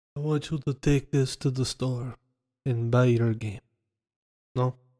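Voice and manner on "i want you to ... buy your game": put-on Italian accent on every word. Retelling what an Italian man told them, in an Italian accent. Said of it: "that's my Italian voice".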